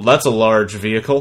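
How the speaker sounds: level, toneless, flat monotone. Retelling a scene from a tv show, a character's reply in monotone.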